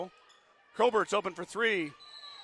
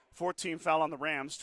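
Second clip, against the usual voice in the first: ordinary talk, nothing marked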